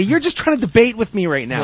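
ordinary talk

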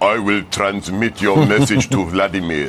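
low, deep movie villain voice. Panelist retelling the then president's reply, in a Lethal Weapon villain voice. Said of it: "sounds like the bad guy from like Lethal Weapon 5".

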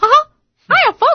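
squeaky cartoon mouse voice. Asked to do it on command, the speaker bursts out with a Mickey Mouse impression. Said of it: "busted out with a Mickey impression".

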